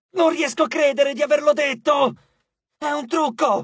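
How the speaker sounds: yelling loudly, high-pitched. Eris speaks after Nyx cries out for light, shouting. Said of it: "urlò Eris".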